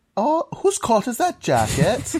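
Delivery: very high, rising, sing-song Welsh lilt. Retelling someone's joke about how easy Welsh accents are, the speaker does a put-on Welsh accent. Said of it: "how easy it is to do a Welsh accent".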